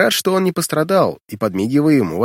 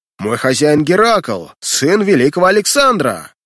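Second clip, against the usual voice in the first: fierce, furious, outraged shout, rising in pitch; 3 dB louder than usual. Reading a servant knocked down before a laughing crowd, getting up and shouting. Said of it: "Вскричав, он яростно бросился".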